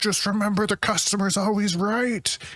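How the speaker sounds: high-pitched, rousing shout. Retelling what a man shouted as he was leaving, imitating a rally-style shout. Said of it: "he shouts like this is like a rally".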